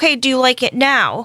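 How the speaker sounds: sassy, snippy, put-out tone with attitude. Retelling what a hairdresser said to a customer: imitating someone with an attitude. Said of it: "But with an attitude".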